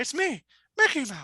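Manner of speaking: slow, booming, cartoonish voice. Doing a voice for the others: Mickey Mouse voice. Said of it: "That's pretty good".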